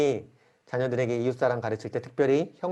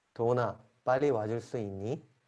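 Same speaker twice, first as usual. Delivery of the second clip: polite, kind and friendly tone; 5 dB quieter than usual. Showing how Kihun could ask Dohun to come quickly: said kindly. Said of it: "친절하게".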